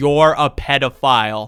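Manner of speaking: loud, blunt, point-blank accusing tone. Telling how he stared a man down in a busy food court, retelling a loud accusation. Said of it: "looks this man dead in the eye and like says loudly like".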